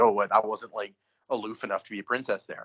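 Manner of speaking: plain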